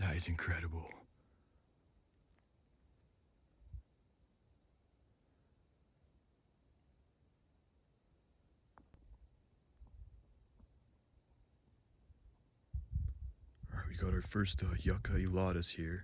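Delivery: soft, hushed whisper under the breath. In a canyon full of hummingbirds, whispering to the audience so as not to scare them. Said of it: "I'm trying to whisper".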